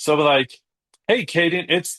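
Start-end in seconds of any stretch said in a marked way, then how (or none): 1.1-2.0 high voice, stopping dead, abruptly cut off mid-sentence. Showing how to leave a voicemail that stops suddenly: abrupt cut-off after "it's". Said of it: "and then stop saying anything else".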